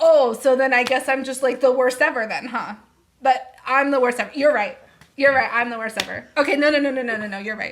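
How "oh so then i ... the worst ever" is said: biting, heavy, mocking sarcastic tone. Imitating the other speaker during a conflict, imitating sarcastic tone. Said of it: "what I put for you was no sarcasm".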